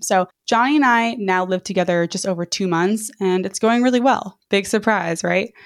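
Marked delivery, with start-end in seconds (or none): 4.5-5.5 sarcastic, ironic tone. Describing how living with a roommate is going, sarcastic. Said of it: "That was sarcasm".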